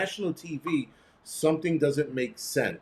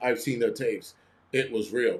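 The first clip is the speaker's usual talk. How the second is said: put-on robotic voice, lower pitch; 3 semitones lower than usual. Retelling what a man said on arriving at the office, imitating a robotic voice. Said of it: "he sounded like a robot".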